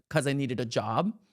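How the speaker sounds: smug, self-satisfied, lecturing, scolding delivery. Retelling an actress's red carpet answer: imitating a smug scolding tone. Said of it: "I'm scolding the camera kinda smug vibe".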